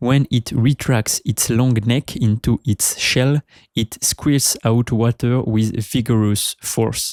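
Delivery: put-on awful English accent.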